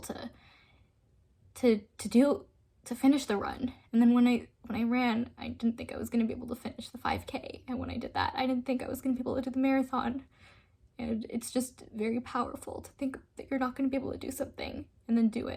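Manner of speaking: emotional, choking-up voice welling up with feeling. Recalling finishing a run never thought possible, emotional, choking up. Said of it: "it makes me really emotional talking about it".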